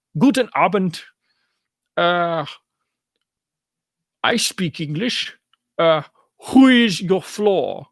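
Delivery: terrible, goofy put-on German accent. Retelling what he says, in a goofy German Dutch voice. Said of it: "weird German Dutch voice".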